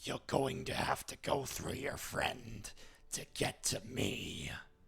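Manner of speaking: gravelly, creaky monster voice. Voicing a character who stabs a player, in Venom's voice. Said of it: "he actually says it in Venom's voice".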